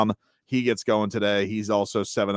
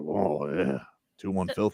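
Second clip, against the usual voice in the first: put-on soothing voice, quieter; 2 semitones lower, 5 dB quieter than usual. Retelling what Paul Maurice said about a play: imitating Paul Maurice. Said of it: "Paul Maurice was like".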